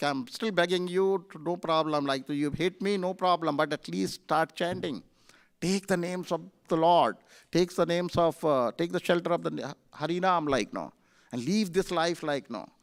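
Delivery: normal talking voice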